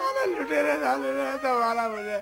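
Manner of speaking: crying, sobbing complaint. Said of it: "आप क्यों रो रहे हो?".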